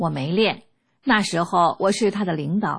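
ordinary talk, nothing marked

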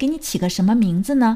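ordinary delivery

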